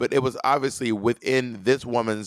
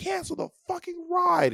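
put-on, shrill, very high-pitched mad yelling. Describing a video of a woman in an Uber, imitating her yelling. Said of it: "she's like yelling".

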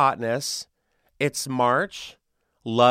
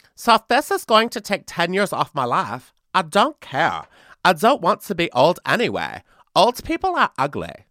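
put-on weird, swooping German heiress accent, pitched up; 5 semitones higher, 4 dB louder than usual. Reading out a TikToker's quote, in an Anna Delvey accent. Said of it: "I had to read it as Anna Delvey".

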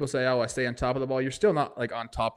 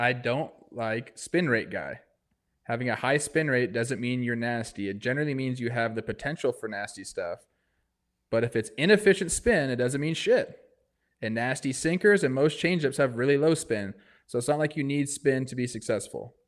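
plain

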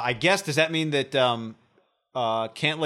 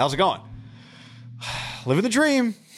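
worn-out, deflated, weary, sighing resignation; 5 semitones higher than usual. Showing how the phrase is always delivered: mock weary sighing delivery. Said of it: "Living the dream is always delivered like this".

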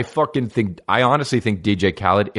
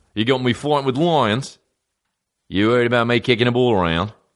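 bad, fake, put-on New Zealand accent. Quoting a man they didn't want to risk injuring, in a bad New Zealand accent. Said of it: "difference between Australian accent and New Zealand".

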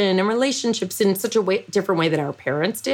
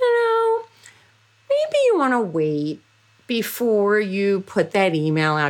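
sweet, tender, sing-song, gentle coaxing tone. Speaker imitates her conversation partner's advice to her, imitating someone's ever-nice voice. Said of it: "you will say to me in your ever nice voice".

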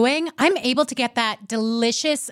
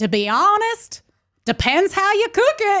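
heavy put-on Southern drawl, slow, pitched up; 8 semitones higher than usual. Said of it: "he's got a thick Southern accent".

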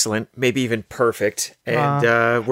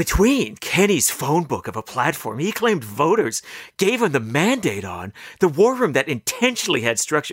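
eager, breathless know-it-all voice; 3 semitones higher than usual. Having agreed to do exactly one sentence, read it in a Hermione voice. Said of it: "I'm going to do exactly one sentence in Hermione's okay. voice".

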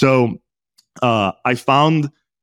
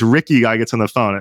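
ordinary talk, nothing marked

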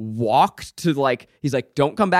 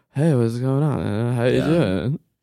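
drawling delivery with stretched-out words; 3 semitones lower than usual. Imitating an actor's line from the movie: Chad Michael Murray's Ryan Gosling drawl. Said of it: "he's kind of doing, like, a Ryan Gosling drawl".

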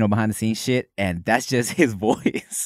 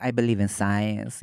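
put-on funny Mexican accent, leaned into; 3 semitones lower, 5 dB quieter than usual. Describing a movie character's voice, imitating Skeleto's Mexican accent. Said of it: "specific, funny Mexican accent that he does".

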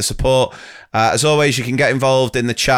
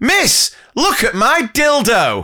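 put-on very high, swooping, proud, drawn-out child shout; 11 semitones higher than usual. Reading out a story, quoting a five-year-old: imitating a child proudly shouting. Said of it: "proudly finished his daffodil and shouted".

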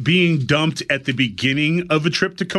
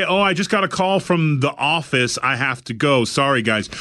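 ordinary talk

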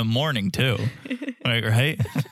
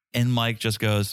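ordinary delivery

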